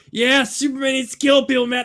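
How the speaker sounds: stoner talk, pitched very high. Mocking how another speaker portrays a man, imitating a stoner. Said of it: "He's like".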